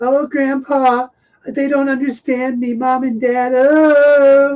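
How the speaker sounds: put-on very high, slow, whiny teen voice. Mocking Adam Driver's character as a whiny little goth: whiny goth voice. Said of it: "He's a whiny little goth".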